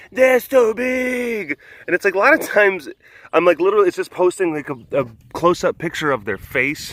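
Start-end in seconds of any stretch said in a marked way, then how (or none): 0.2-1.6 high, slow, shouted fan gush. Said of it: "there's comments".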